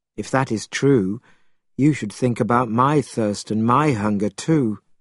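ordinary delivery, nothing marked

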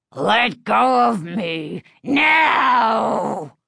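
snarling, dog-like growl. Narrator reads the dummy's demand as Chris holds on, growling. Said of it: "the dummy growled".

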